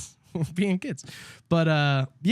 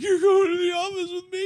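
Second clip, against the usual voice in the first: put-on trembling, very high-pitched, shaking voice. Retelling the teacher telling someone to go to the office: imitating a shaking voice. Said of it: "She was shaking, literally shaking".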